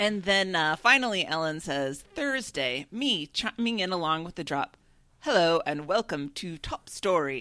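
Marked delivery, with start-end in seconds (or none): 5.2-7.4 put-on posh upper-class British accent. Chiming in along with the show's opening drop, in a posh British accent. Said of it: "in my best posh British accent".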